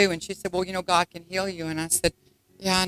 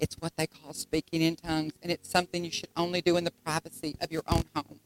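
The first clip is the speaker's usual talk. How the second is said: quiet, hushed half-whisper stage whisper; 8 dB quieter than usual. Retelling what the mother half-whispered in church: imitating mother's half-whisper. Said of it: "she whispered to me".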